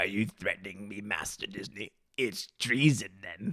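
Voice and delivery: low-pitched, hushed, quiet voice. Reading out what Alex Martinez says, in the Emperor's voice. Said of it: "says in the Emperor's voice".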